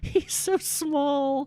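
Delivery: very high-pitched words bubbling out between giggles. During a serious discussion in a game scene, a woman answers giggling while talking. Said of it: "She just starts giggling".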